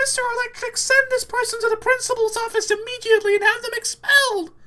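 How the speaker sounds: very high, loud, squeaky little voice. Showing how to raise your hand and call out, high-pitched squeaky voice. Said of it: "in the high-pitched, squeaky voice say".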